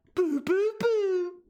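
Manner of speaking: very high, wailing, exaggerated baby talk. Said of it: "Made me sound like I'm talking to a baby".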